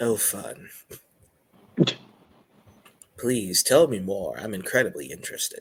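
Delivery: sarcastic, feigned interest. Replying in character to a story about a bard band: sarcastic. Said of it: "he says sarcastically".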